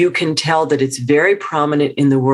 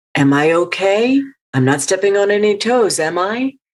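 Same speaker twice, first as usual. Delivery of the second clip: pitch climbing at the end of every line; 5 semitones higher than usual. Explaining how upspeak sounds like asking permission, with a rising questioning tone. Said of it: "sounds like you're asking a question".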